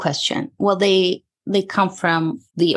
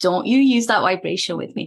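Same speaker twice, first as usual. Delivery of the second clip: plain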